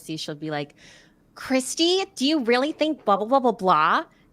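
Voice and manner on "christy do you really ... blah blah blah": over-the-top, exaggerated sing-song put-on voice, pitched up. Showing how the character talks to Christy: exaggerated in-character voice. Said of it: "And she'll kinda talk like that".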